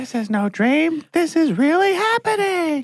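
very high, slow, drawn-out, dazed delivery. Quoting a film line after the other speaker: Mia Farrow impression. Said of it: "Great Mia Farrow impression".

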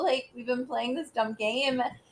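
ordinary delivery

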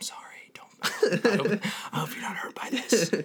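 sensual, slow, breathy whisper, very close. Acting out a wrestling move, speaking to a pinned opponent: acting out a whisper. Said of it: "whispering in his ear".

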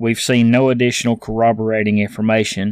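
ordinary talk, nothing marked

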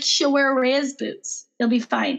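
plain

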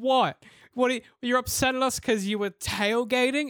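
high-pitched mocking words broken by laughing. Retelling a woman laughing at a yelling driver who tailgated: retelling someone laughing hard. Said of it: "She's like pissing herself".

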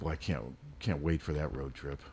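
very quiet, barely audible sarcastic mutter, mock enthusiasm. Reacting to news that road trip tickets were ordered: sarcastic. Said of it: "I'm being sarcastic".

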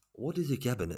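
put-on slightly high Mexican accent. Describing how each episode is introduced: Guillermo del Toro impression with Mexican accent. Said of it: "in his beautiful Mexican a-, a-, accent".

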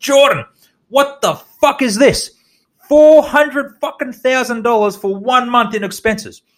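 mock screaming rant, pitched way up. Retelling a boss who storms in over expenses: imitating someone screaming. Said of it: "he starts screaming".

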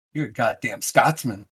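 quiet, hushed, mock-insulting put-down. Showing that any word can sound like an insult: mock insulting tone. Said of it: "it sounds terrible".

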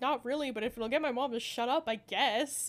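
ordinary delivery

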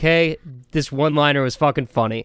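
ordinary talk, nothing marked

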